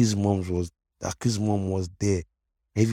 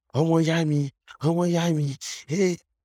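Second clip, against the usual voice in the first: mock crowd screaming, higher pitch; 9 semitones higher than usual. Retelling a crowd cheering after a win: imitating people screaming. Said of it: "everyone was screaming".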